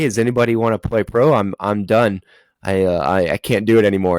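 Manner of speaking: put-on dead-tired, worn-out, exhausted pleading tone. Retelling asking a tent of kids if anyone wants to play pro, retelling a dead-tired plea. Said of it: "I'm dead tired after one of my games".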